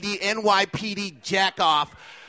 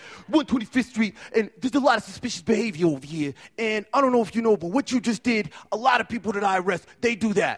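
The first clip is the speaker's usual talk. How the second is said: imitated New York accent. Speaker retells what a man who arrests people said on 125th street, new york accent. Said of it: "he had a New York accent".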